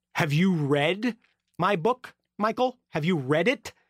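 solemn, dead-serious, grave and slow delivery. Retelling a man leaning in to ask about his book: imitating someone very serious. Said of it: "he gets very serious and leans into me and says".

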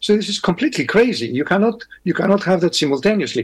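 ordinary talk

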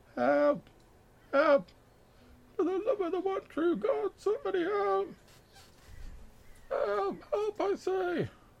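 very faint, distant, very high, drawn-out cries. Describing a voice heard while getting nearer through the trees; very faint voice. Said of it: "you hear this like very faint voice".

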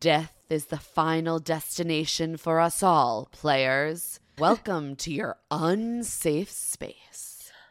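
put-on slow, hyper-dramatic, theatrical Scottish accent, leaning in. Quoting the host's lines from the show: hyper dramatic Alan Cumming line. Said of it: "hyper dramatic lines".

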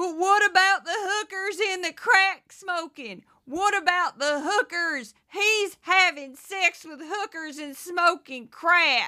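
loud, high, put-on Southern accent. Mocking an imagined MAGA supporter's rebuttal: put-on MAGA voice. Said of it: "that's my MAGA voice".

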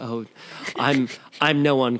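mock seminar speaker voice, self-help style. Acting out a seminar speaker answering admiring fans: mock seminar speaker voice. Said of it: "you just talk in that voice all the time".

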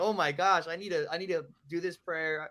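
plain

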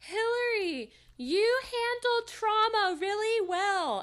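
very high, loud, drawn-out yelling. Retelling how a friend yelled over the DJ at a club: imitating Luke yelling. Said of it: "Luke yelled over the D J".

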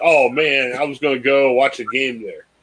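kind of mocking, lightly sarcastic, offhand. Retelling a reply to a pub's ban: sarcastic LeBron impression. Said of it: "he was kind of sarcastically like".

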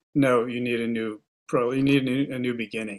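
ordinary delivery

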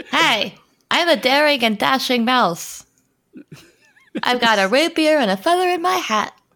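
squeaky, high-pitched, put-on little mouse voice. Player offering to play a mouse in the game, in a mouse voice. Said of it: "I could do my mouse voice".

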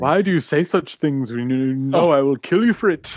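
put-on slow, drawn-out British accent. Quoting a villain's line from the film: Zod impression with British accent. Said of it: "he had the British accent".

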